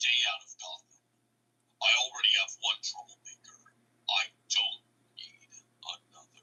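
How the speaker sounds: low, breathy whisper. Showing listeners a voiceover you did yourself without AI, in a low-pitched Batman voice. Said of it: "I pitched my voice low".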